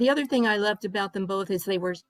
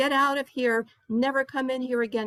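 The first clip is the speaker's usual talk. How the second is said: mild, restrained, held-in mock yell; 4 semitones higher than usual. Telling a story, the speaker quotes the deli owner ordering a baker out, imitating someone yelling. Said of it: "He started yelling".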